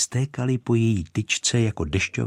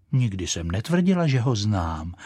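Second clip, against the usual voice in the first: plain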